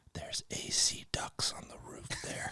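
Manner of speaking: soft, hushed whisper, close to the ear. Retelling what a man behind him in church whispered in his ear, whispered. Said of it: "he whispers in my ear".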